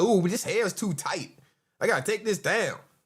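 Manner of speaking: play-acted, sass-laden sassy tone. Mocking another speaker's earlier live stream words: imitating someone being sassy. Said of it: "He started off the whole sassy shit".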